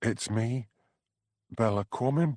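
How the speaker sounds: small, scared, frightened little voice. Narrator reads a caller announcing who is phoning, in a scared little voice. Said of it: "said a scared little voice".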